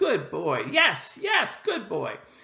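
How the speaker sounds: happy, high sing-song tone. An instructor demonstrates praising a dog for looking at a toy, using a happy voice. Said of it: "using a happy voice".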